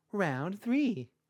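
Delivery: very high, very loud, cutesy kawaii anime announcer voice. Narrating a fight story, announcing the next round in an uwu anime announcer voice. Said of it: "Uwu voice".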